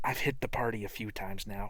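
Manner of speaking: speaking in a whisper. Voicing a character speaking quietly to Fang: whispering. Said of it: "he kinda whispers to Fang".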